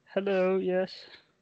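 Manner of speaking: timid, meek, high little voice. Podcast host mocking a co-host's intro, imitating Kimbo's meek intro. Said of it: "It was so meek. It was like".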